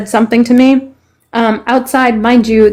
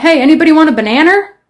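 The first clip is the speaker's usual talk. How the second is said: put-on New Hampshire accent, banana pronounced ending in R; 6 semitones higher than usual. Retelling a grandfather from New Hampshire: imitating grandfather's New Hampshire accent. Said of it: "they put an R after everything".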